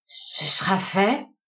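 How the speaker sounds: stammering in a choked, strangled voice. Reading a novel aloud, a tramp answers a stranger's order: stammering, strangled voice. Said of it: "balbutia Dad d'une voix étranglée".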